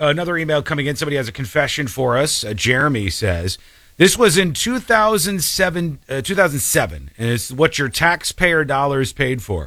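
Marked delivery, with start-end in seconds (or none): none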